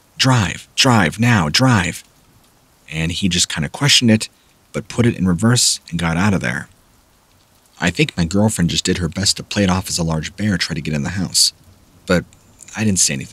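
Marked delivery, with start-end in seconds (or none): 0.2-2.1 very slow put-on scream, each word drawn out, urgent. Retelling screaming at her dad to drive away: imitating a scream. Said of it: "were screaming at him".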